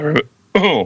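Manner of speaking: put-on voice cracking high mid-word, like teenage boy's breaking voice.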